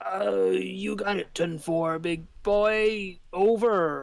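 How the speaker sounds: put-on slightly tipsy, a bit drunk voice. Voicing Wallace answering over a magic earring: slightly tipsy voice. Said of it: "a slightly tipsy".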